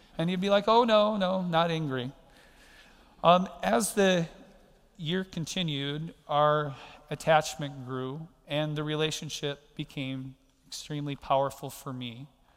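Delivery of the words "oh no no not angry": mock-innocent, passive-aggressive, higher and louder. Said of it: "in a very passive-aggressive way".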